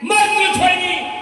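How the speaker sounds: loud, high-pitched shouting.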